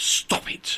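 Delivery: hushed, unvoiced whisper.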